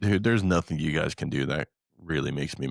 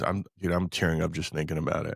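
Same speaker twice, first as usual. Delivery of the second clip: usual speaking voice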